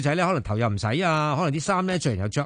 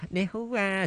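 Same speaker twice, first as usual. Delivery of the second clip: put-on kawaii cutesy girl voice; 4 semitones higher, 5 dB quieter than usual. Describing girls who pretend to be kawaii when talking: put-on kawaii cutesy voice. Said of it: "扮卡哇伊啊講嘢".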